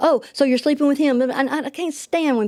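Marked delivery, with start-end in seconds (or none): 0.0-1.2 whiny, wimpy, spineless-sounding voice. Retelling how he accused her: imitating him in a wimpy way. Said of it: "he just sounds like such a panty way saying all this stuff".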